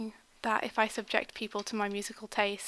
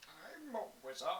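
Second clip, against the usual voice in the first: put-on very soft, quiet, low, really old voice; 4 semitones lower, 14 dB quieter than usual. Retelling what Mike said at his computer behind them, Mike's really old wizard voice. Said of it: "in a really old voice".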